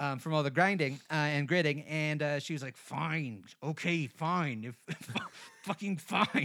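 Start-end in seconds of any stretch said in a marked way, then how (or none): 2.8-6.5 very slow words ground through clenched, gritted teeth. Retelling a reluctant yes from her: imitating someone speaking through gritted teeth. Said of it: "through gritted teeth, extremely gritted".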